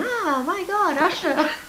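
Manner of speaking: put-on starstruck sixteen-year-old girl voice. Retelling her past self watching [name] on TV, imitating a typical sixteen-year-old girl. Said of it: "the typical sixteen-year-old girl going".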